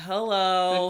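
imitated smug voice. Retelling meeting a woman on a trail again: imitating a smug greeting. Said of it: "this smug look on her face".

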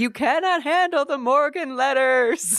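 mock, very high, shrill, loud, upset crying outburst. Retelling a reality show scene, imitating Sonja Morgan upset and crying. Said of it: "she got very upset, and she started crying, and she was like".

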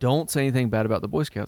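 ordinary talk

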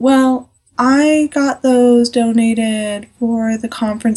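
slow, meek, whiny, limp milquetoast drawl. Retelling what the speaker's boss said to them: imitating boss's quiet whiny voice. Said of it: "he's talking just like this, like really quiet".

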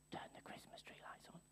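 very quiet, barely audible whisper. Speaker recounts whispering a command to Alexa this morning, retelling a whisper. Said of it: "and I whispered to Alexa".

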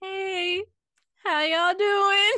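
very loud, slow, stretched-out "hello". Imitating a TikTok sound about coming back after ghosting: imitating a TikTok sound. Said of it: "heard that TikTok sounds? It's like".

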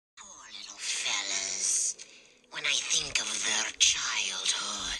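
creepy put-on creature voice. Asked to attempt the Crypt Keeper, slipping into a Gollum voice. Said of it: "stop doing Gollum".

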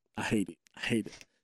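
put-on breathy, tearful, whispered crying. Retelling a phone call home to mom during training: imitating own past crying. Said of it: "on the phone crying to my".

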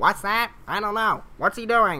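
high-pitched, silly robot voice. Complaining about an episode, imitating the droids' chatter in a battle droid voice. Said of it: "it's just battle droids going".

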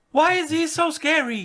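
put-on high-pitched, childlike voice.

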